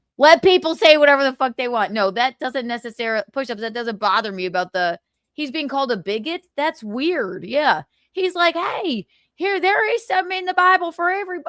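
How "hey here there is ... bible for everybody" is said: put-on American southern accent, laid on, pitched up. A speaker voices the person being discussed, in a put-on southern accent. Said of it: "Why did I give him a southern accent?".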